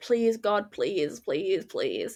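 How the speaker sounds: put-on tearful, desperate, hard pleading. Retelling own past prayers in difficult times: imitating own past pleading. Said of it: "begging for things to stop and end".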